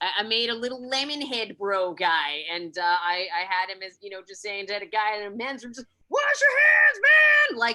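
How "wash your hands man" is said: shouted, very high pitch. Quoting a comic character telling a guy in a men's room: imitating a loud shout. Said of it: "he says it really loud".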